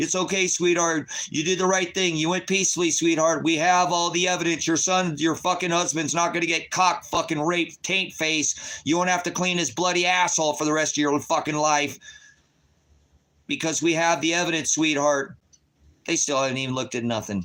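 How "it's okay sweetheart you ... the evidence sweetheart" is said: acted-out high-pitched screaming tirade. Retelling what was said to a daughter: imitating own screaming. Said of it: "I'm screaming at my fucking daughter".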